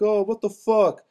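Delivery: slow, high-pitched yelling. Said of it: "They were yelling at me".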